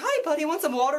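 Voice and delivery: kind, helpful, friendly voice. Retelling the movie, quoting the good cop: imitating the good cop. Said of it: "the good cop is like".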